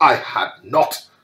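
very loud, sharp, furious angry outburst. Narrator reads the mouse answering Alice: sharp and very angry. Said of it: "cried the mouse sharply and very angrily".

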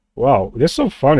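words breaking up, laughing hard throughout. Reacting to a game result of twenty-seven kills, laughing hard while talking. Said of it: "I'm laughing so badly".

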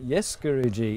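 ordinary delivery

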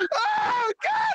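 high, piercing scream.

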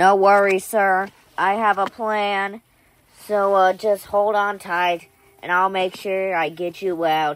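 irritating, annoying robotic AI assistant voice. A backup ai answers a prisoner begging to be freed; annoying backup ai voice. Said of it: "You can tell by my annoying backup AI voice".

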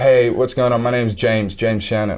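ordinary talk

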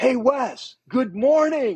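mock very high, drawn-out, cheery, gleeful yell. Retelling a surfer greeting him after a wipeout: imitating someone screaming. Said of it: "Screams it in my face".

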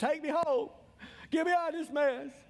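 sobbing, screaming, high crying scream. Recalling people at the altar in revival meetings, imitating crying and screaming. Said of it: "They'd all be down the altar crying, screaming".

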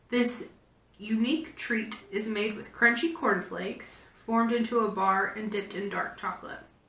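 ordinary delivery

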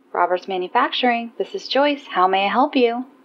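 overly cheerful, too-bright receptionist style delivery. Joyce answers the phone at Roberts Manufacturing; overly cheerful. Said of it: "An overly cheerful voice answered".

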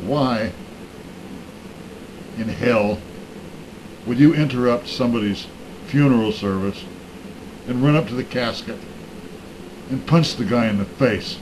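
ordinary talk

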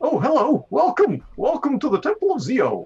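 put-on happy, cheerful young man voice. Voicing a young man greeting visitors at a temple: happy young man voice. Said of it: "a bright-eyed, happy young man".

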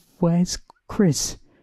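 very high, blurted-out, rising tone. Reading the narrator's question to two ghosts circling them, blurted out. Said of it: "I managed to blurt out".

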